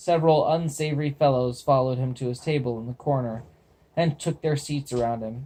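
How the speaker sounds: ordinary delivery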